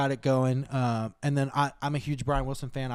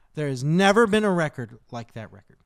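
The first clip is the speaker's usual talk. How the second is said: louder, passionate, declaring delivery. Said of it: "Listen to the passion in his voice".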